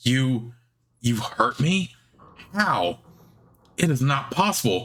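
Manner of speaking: thrown, stunned, shocked disbelief. Narrating a fight, the storyteller voices a wounded creature's reaction, shocked. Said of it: "She is shocked".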